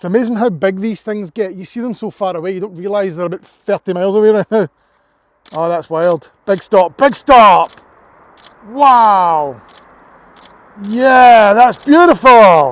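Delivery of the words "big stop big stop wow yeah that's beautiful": very loud, very slow, drawn-out, awed, excited shouting. Speaker watching a vehicle make a big stop far away, shouting. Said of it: "Sorry about shouting all the time".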